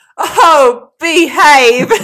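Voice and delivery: very loud, high-pitched outburst. Recounting answering someone's compliment, retelling a loud exclamation. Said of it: "really loudly".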